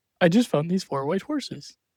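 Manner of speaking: put-on soft, gentle giant voice. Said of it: "gentle giant kinda way".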